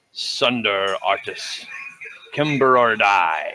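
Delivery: authoritative, commanding delivery. Game narrator voices an unseen caller heard from the gate's direction, booming voice calling out. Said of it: "You hear a booming voice".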